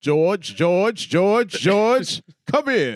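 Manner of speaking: very regal, stately, loud and slow. Calling George over in a put-on voice, regal, stately voice. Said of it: "very regal, very stately".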